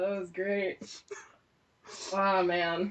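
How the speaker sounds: speaking through laughter. Reacting to a blooper, unable to stop laughing: laughing while talking. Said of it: "stop laughing right now".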